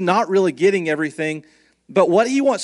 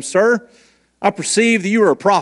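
put-on sarcastic tone, mock sarcasm; 3 dB louder than usual. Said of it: "You can almost hear the sarcasm in her voice".

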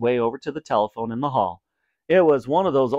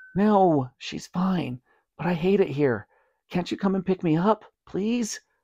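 high, hushed half-whisper under the breath; 5 semitones higher, 4 dB quieter than usual. Ben asks to be picked up and taken home, half-whispered. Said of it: "Whispered Ben".

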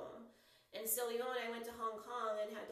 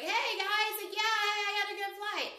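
very loud, very high-pitched chatter; 11 semitones higher, 11 dB louder than usual. Describing jet lag and popping ears, the speaker retells talking too loudly. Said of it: "so loud, like this".

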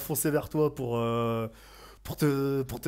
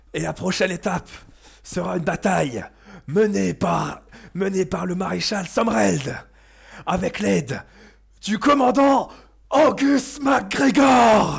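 very loud, straining, high shout at full volume; 5 semitones higher, 9 dB louder than usual. A small rebel announces the next battle to the crowd, shouting.

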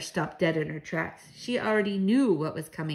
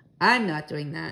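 ordinary delivery

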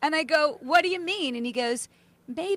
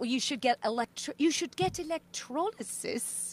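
put-on British accent; 4 dB quieter than usual. Retelling what a man told the speaker: imitating a British accent. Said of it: "he's fucking talking to me in a British accent".

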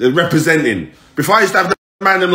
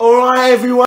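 raised imitated announcer voice; 7 semitones higher than usual. Mocking the friend's on-camera intro: imitating Omar. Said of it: "he went".

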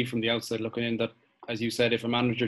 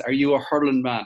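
put-on Galway Irish accent; 2 semitones higher, 6 dB louder than usual. Interviewer puts the old cliché question to a guest, in a Galway Irish accent. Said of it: "in my best Galway accent".

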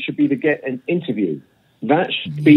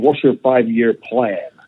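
put-on American accent; 3 semitones lower than usual. Quoting coaching-world people asking about your plan: put-on american accent. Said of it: "I can put an American accent".

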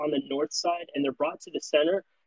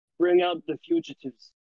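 very high, rough, creaky squeezed-out character voice; 11 semitones higher than usual. Voicing a character addressing a cheering crowd: Herzog Warner voice. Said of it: "in Herzog Warner's voice".

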